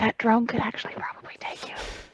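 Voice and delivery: breathy whispered aside, barely voiced. Speaking from behind Q Q in character: whispering. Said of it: "I whisper".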